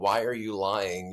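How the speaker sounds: mock loud yell. Retelling yelling at the TV while watching shows: imitating yelling at the TV. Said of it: "yelling at the T V".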